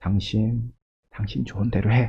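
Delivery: very quiet, gentle, soft, soothing, consoling tone. Contrasting a stern rebuke with a softer reading of the line: soft comforting tone. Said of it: "부드러운 위로였을까요?".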